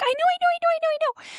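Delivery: put-on tiny, very high little-girl voice. Retelling a tiny girl in the front row shooting up her hand, little-girl high voice. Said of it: "in this little high voice".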